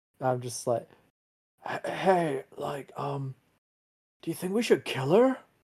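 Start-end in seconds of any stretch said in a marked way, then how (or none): 1.9-5.4 stage whisper loud enough for everyone. Leaning over to the person beside you in the game, a loud stage whisper. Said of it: "Like a loud stage whisper".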